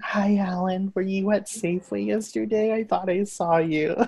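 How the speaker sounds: creepy high voice, kept very soft and hushed. Voice acting over noises a partner makes, speaking in the Creepy Crystal voice. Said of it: "I'll be Creepy Crystal's voice".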